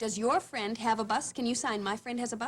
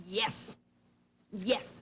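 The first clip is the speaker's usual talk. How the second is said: forceful, emphatically stressed yes. Demonstrating how to answer a question with a yes, emphatic yes. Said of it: "I'm going to say emphatically".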